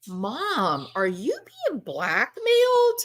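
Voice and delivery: put-on stunned, disbelieving, swooping incredulous tone. Retelling a son's question to his mother, Donna: imitating incredulous tone. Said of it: "you can hear the incredulity in his voice".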